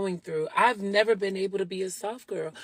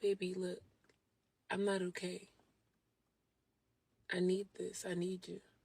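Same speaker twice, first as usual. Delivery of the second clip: very soft, quiet, hushed, lowered and fragile voice; 13 dB quieter than usual. Speaker shows how she talks when she needs to be taken seriously: lowered voice. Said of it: "when I lower my voice and I need to be taken seriously and handled delicately".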